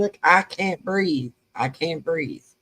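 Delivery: ordinary delivery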